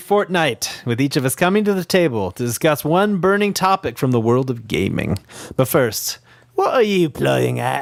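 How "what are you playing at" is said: bad, terrible put-on Cockney accent. Asking the others what they are playing: terrible Cockney accent. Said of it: "It's just that terrible Cockney accent".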